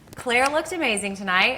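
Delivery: ordinary delivery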